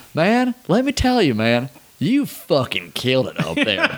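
put-on heavy Southern accent, high pitch, swooping tune. Retelling a personal phone call from the boss, do Van's strong Southern accent. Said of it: "he's got the strong Southern accent".

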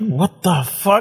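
put-on dumbfounded, stunned voice. Retelling how a young cop reacted to the car: imitating a dumbfounded cop. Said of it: "he was just dumbfounded".

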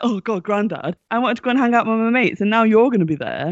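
put-upon, complaining whine. Retelling how the grandson felt about his granddad coming: imitating Ryan complaining. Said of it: "It's like".

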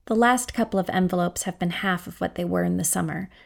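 ordinary delivery

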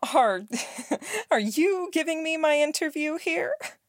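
high, slow, defensive little laugh, caught off guard. A woman being interviewed is caught off guard by a question, defensive little laugh. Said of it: "She laughed a little, defensive, caught off guard".

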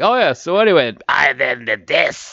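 put-on slow, raspy, worn old heavy-smoker voice. Retelling a burned throat from hot pepper oil: imitating a heavy smoker's voice. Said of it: "sounding like an eighty-nine-year-old retiree who was smoking three packs a day".

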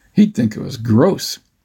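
ordinary talk

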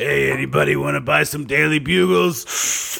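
gruff, rough, creaky middle-aged man voice. Imitating a child newsie from a movie, a kid with a 50-year-old man's voice. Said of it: "a 10-year-old newsie with the voice of a 50-year-old man".

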